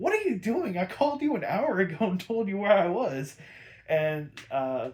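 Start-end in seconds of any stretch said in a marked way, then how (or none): 0.0-3.4 high, fed-up, exasperated, near-angry, barely contained irritation. Retelling a scene where Robin scolds the police: imitating Robin being almost mad. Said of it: "he's almost mad at this point".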